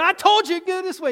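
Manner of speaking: high-pitched yelling. Speaker re-enacts what they yelled at a woman, retelling a yell. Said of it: "And I yelled at her".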